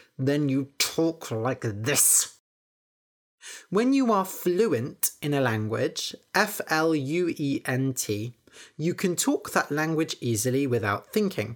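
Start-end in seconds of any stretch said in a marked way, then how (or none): 0.2-2.4 talking through gritted, clenched teeth. Explaining an English phrase to learners, showing talking through gritted teeth. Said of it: "If you say something through gritted teeth".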